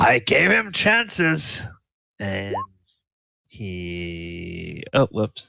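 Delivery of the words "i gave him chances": raw, rough, very high shrieking holler. Voicing the hobgoblin captain in combat: yelling. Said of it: "he yells out".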